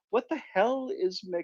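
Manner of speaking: getting a bit worked up. Talking with Daniel about world leaders, getting a little emotional. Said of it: "I'm getting a little bit emotional here".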